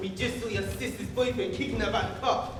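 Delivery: ordinary delivery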